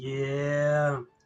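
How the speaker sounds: mock miserable delivery. Retelling answering a coworker about seeing the girl: retelling a miserable yeah. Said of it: "Why do you sound so miserable saying that?".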